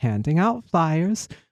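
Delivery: ordinary delivery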